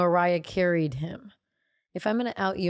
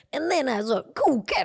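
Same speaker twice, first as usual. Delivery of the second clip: jive-talking impression, higher pitch; 6 semitones higher than usual. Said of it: "He did a jive".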